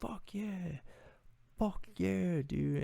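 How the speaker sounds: full-throated, high-pitched, drawn-out cheering scream. Retelling a reaction alone in the car: imitating own screaming. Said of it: "screaming at the top of my lungs".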